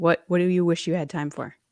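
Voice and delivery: as fast as possible, rapid-fire. Announcing a question after being told to say it fast, as fast as possible. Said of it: "say this as fast as you can".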